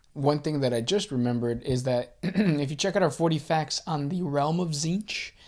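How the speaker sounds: voice cracking and breaking mid-phrase. Reminding listeners of their 40 facts on Tzeentch, voice cracking. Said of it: "as my voice is cracking".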